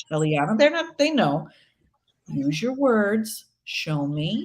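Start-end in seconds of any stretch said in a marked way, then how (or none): 2.3-4.5 very slow, soothing, even and calm voice. A parent acts out speaking to a child mid-tantrum, acting out a calm voice. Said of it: "in a calm voice".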